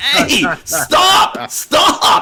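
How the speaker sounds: pained, hurting, urgent called-out yell. Retelling a scene where Superman is hurt and the dog jumps on him: imitating Superman yelling at a dog. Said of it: "yelling at the dog".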